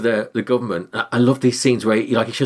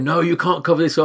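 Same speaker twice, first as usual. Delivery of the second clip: mock protesting outcry, shouted; 6 semitones higher than usual. Describing a courtroom scene, the speaker quotes the woman shouting at him: retelling a shout. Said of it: "the woman shouts at him, going".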